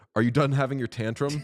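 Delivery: mock calm, cool, composed, quick, level voice. Retelling how a man answered someone yelling at him: retelling a calm reply. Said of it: "And Nathan just calmly says".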